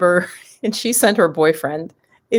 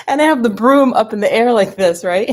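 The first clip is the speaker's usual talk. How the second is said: ordinary delivery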